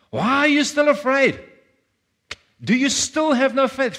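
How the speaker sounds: very high, stern, frustrated angry scolding. Showing how some hear the question, the speaker says it in a frustrated, angry scolding tone. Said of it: "like a headmastery kind of tone, a frustrated, angry, authoritative parent kind of thing".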